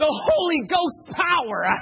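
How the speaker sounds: very high, loud, raspy preacher voice. Recalling a man at the pulpit and quoting him: imitating a preacher's raspy voice. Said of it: "he had this real weird raspy tone to his voice".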